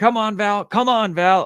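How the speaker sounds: insistent high yelling. Retelling how they shook val awake and yelled at her: retelling a yell. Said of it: "I'm yelling at her".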